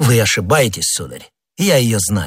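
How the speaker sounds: ordinary delivery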